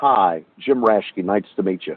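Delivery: put-on plain Midwestern American English accent, low pitch. Retelling how he introduced himself after the cut, in Jim Raschke's soft-spoken Midwestern accent. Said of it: "in this very soft-spoken English Midwestern accent says".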